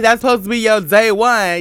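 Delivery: ordinary delivery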